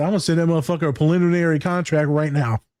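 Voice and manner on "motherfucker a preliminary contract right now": normal talking voice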